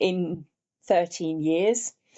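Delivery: slow, emotional delivery.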